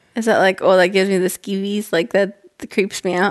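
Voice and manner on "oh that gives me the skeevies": usual speaking voice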